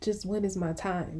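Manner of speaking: usual speaking voice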